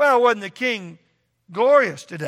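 loud, mocking, sarcastic tone. Retelling how she mocked her husband when he came home, mock-sarcastic retelling. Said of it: "she sarcastically mocked David".

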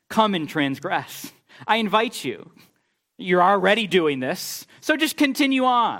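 sarcastic, falsely welcoming tone soaked in sarcasm. Paraphrasing the Lord inviting the people to keep sinning: acting out a sarcastic invitation.

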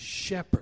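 emphasizing 'shepherd'. Speaker repeating a verse, emphasizing a different word each time; stress on 'shepherd'. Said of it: "emphasizing a different word each time".

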